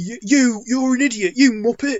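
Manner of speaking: high, loud mock rant.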